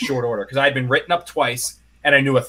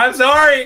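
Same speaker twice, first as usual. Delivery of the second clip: fake crying scream, higher and louder; 12 semitones higher, 6 dB louder than usual. Imagining pleading with a judge in court: mock sobbing and screaming. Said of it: "I'm gonna start sobbing, screaming".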